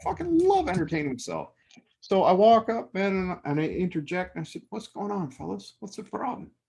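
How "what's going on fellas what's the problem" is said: very calm, soft, casual, easygoing tone. Retelling walking up to heated parties and interjecting, retelling speaking very calmly. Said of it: "Very calmly".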